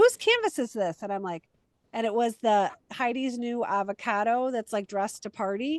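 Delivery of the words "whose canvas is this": play-acted, very high, shrill, loud, pushy tone. Retelling someone shoving a phone in her face: imitating Karen asking aggressively. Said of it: "and I say it like it's aggressively".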